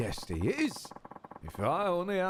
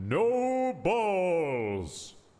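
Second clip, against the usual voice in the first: huge booming voice with a drawn-out "no"; 3 dB louder than usual. Imitating a line joke-style with a big booming voice. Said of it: "the big booming".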